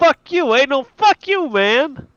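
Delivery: put-on very high Boston accent shout. The game master voices a commotion of shouting dwarves: shouting in a boston accent. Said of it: "What sounds like a typical Bostonian".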